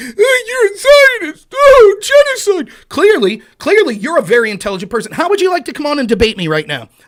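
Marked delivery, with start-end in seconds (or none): 0.0-2.7 put-on shrill, slow, high, drawn-out crybaby whine. Taunting an anonymous critic, imitating someone whining and moaning. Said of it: "who's been on here whining and moaning".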